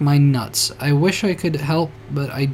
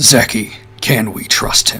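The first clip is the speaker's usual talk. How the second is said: slow, exaggerated, bass-heavy put-on deep voice; 5 semitones lower, 4 dB louder than usual. Reluctantly pulling out a special voice for this line: deep voice. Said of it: "I need to pull out the deep voice for this. ... That was just deep".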